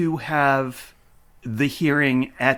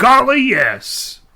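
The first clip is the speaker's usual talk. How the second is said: put-on country judge voice, higher and louder; 10 semitones higher, 7 dB louder than usual. Retelling what the judge says in court: imitating a country judge. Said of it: "It's my imitation of a country judge".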